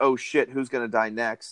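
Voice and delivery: ordinary delivery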